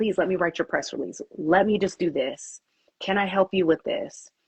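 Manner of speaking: ordinary talk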